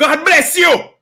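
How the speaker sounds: acted, very high, furious-sounding angry yell. Retelling shouting at a driver who cut them off: retelling an angry shout. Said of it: "I shouted out".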